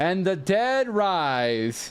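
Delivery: dry mocking sarcasm, swooping rise drawn out. Greeting another character as she walks in, sarcastic. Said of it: "I will say sarcastically".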